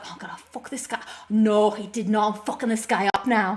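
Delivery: put-on Liverpool Scouse accent. Gamer retelling what they said while playing Neo, Liverpool accent. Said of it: "I was talking in my Liverpool accent".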